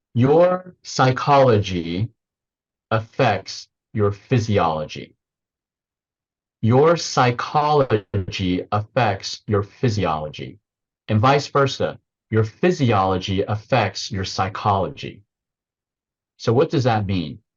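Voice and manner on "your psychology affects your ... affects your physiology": slow, deliberate, every word spaced and weighed. Interviewee sharing a takeaway with the audience, spoken slowly. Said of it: "I'll say it slowly".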